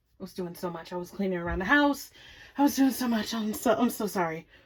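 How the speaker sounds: soft, winded voice catching breath between words. Host opening their news show after a busy day of cleaning, out of breath. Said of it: "let me catch my breath".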